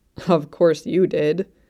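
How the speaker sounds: scornful, derisive scoff. A man answers a woman who thought the interview went fine, scoffing. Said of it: "he scoffed".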